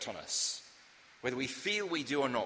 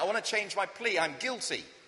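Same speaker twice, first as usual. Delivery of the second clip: sudden, high, raised shouted outburst; 6 semitones higher than usual. Retelling a court story, a man changing his plea: retelling a shout. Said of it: "then shouted out".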